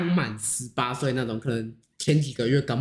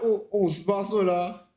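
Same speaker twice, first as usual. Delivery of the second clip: mock defiant, self-righteous, high-pitched tone; 6 semitones higher than usual. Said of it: "就是很理直气壮啊".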